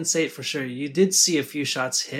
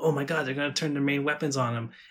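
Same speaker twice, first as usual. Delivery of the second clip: mock thrilled, eager, really excited outburst. Retelling a commander's line about turning the main guns: imitating Ivana getting really excited. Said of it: "You hear it in her voice as she's getting really excited".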